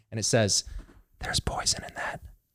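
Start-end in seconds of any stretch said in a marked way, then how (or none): 1.2-2.2 soft, breathy, barely voiced whisper. Recounting a voice heard right behind the neck at church, imitating a whisper. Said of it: "Whisper right behind my neck".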